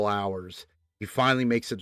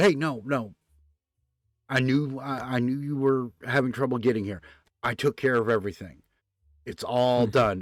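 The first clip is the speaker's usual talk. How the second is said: ordinary delivery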